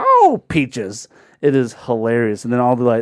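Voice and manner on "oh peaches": put-on quaint, old-time gold-rush miner voice. Retelling a skit in which a performer dressed as an old timey prospector: Old Timey Prospector voice.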